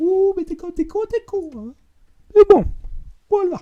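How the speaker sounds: silly, very high-pitched put-on voice. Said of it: "je prends cette voix".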